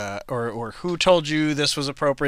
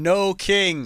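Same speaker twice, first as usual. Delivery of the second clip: yelling in a higher voice; 6 semitones higher than usual. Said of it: "'cause he's yelling".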